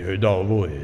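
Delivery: dropped, deep, low bass voice. Retelling what a woman's husband said in reply, imitating a man's bass voice. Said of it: "cu glas de bas".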